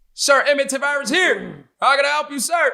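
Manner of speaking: loud military shout, like sounding off at attention. Retelling reporting to a drill instructor: retelling a loud shout. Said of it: "You gotta be mad loud".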